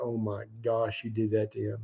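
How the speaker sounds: mock hushed, soft words spoken through laughter. Retelling how the speaker's boater lost it laughing at what he did, imitating someone laughing while talking. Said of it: "Just starts laughing like".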